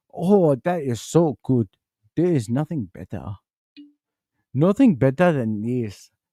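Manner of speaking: Chinese-accented voice. Imagining someone waking up after a knockout with a new voice, mock Chinese accent. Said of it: "the same thing with Chinese voice too".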